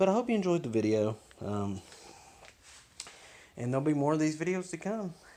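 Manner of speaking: high-pitched, winded, breathless delivery. Wrapping up a video on cleaning a chain: out of breath. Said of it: "sorry I'm out of breath".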